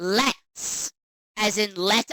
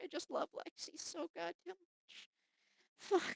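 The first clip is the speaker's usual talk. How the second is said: tearful, crying voice, higher and quieter; 10 semitones higher, 19 dB quieter than usual. Reacting to a moving game scene, crying while talking. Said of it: "I'm actually crying".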